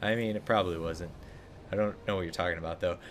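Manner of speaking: plain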